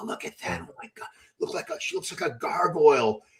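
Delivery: imitated whispering. Retelling what people whispered about retired women bodybuilders: imitating people whispering.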